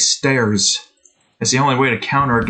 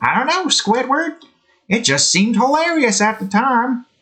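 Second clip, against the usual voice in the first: very high, swooping, sing-song cartoon voice; 12 semitones higher than usual. Acting out a cartoon exchange, answering Squidward, in a SpongeBob voice. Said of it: "I'm not really good at doing a SpongeBob".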